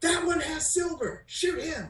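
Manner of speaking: high, shouted battle yell. Voicing a character in a fight who orders others to shoot: yelling. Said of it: "this one yells".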